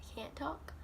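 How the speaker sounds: soft whisper under breath.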